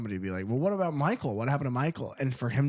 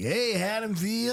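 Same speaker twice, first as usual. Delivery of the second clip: put-on radio announcer voice, much higher; 8 semitones higher than usual. Describing an empty building where a radio voice echoes, imitating the radio voice. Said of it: "this fucking radio voice just like".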